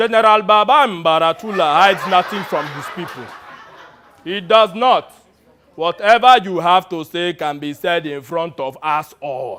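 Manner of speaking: put-on very loud, booming delivery in a Nigerian accent. In an improvised scene, the general answers a lieutenant's request to talk privately, General Baba Mbaratula voice. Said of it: "in his best impression of an African warlord".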